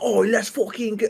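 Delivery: high, badly done, thick, laid-on Maryland accent. Act out Stavros's alter ego after a Ravens game, in a bad Stavros Maryland accent. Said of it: "I can't do the Maryland accent".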